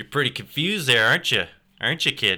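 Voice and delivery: broad rural Alberta accent. Speaker going back to their Alberta hick roots, in an Alberta hick accent. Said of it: "my Alberta hick roots".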